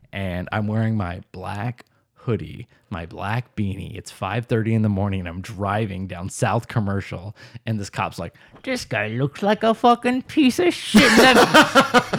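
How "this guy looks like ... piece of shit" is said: put-on Irish cop accent, high-pitched and swooping. Retelling what a cop thought while following him: Irish accent. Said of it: "I like his Irish accent".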